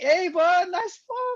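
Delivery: very high, bright, cheery cheering voice.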